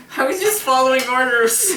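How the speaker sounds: put-on innocent, childlike kid voice.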